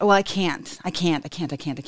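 ordinary talk

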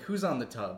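ordinary delivery

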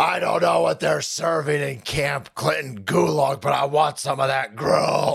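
dumb, stupid-sounding, rough creaky voice. Retelling his answer to his wife about dinner: stupid Bane impression. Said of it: "Stop doing the stupid Bane impression".

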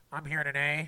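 put-on nasal voice. Quoting a witness's opening statement: imitating a nasally voice. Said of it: "in his nasally voice".

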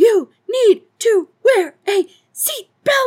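enraged, shrill, very high furious shriek. Telling a story of a woman stabbing a convertible top; imitating someone screaming. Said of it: "is just screaming with each stab".

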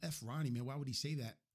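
ordinary talk

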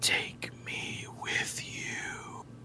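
very quiet, drawn-out dark whisper. Voicing a voice all the players hear in their heads, a dark, whispery voice. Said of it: "a dark, whispery voice in your head".

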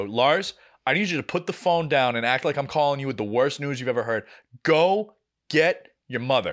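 ordinary delivery

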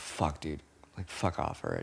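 acted, fed-up, whispered, annoyed outburst under breath. Describing being around family too much: imitating own annoyed outburst. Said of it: "I'm like".

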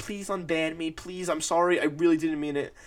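acted, imploring, begging, pleading voice. Retelling a plea to a moderator to be unbanned: imitating someone begging. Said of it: "begging and pleading to Ash".

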